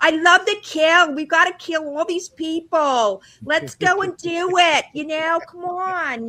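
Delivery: fake, put-on New York accent. Arriving in costume from another event, recounting talking in a put-on New York accent. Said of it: "the New York accent".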